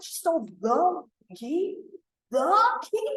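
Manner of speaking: urgent, dramatic, alarmed, high and drawn out. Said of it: "the way that I said it changed the meaning".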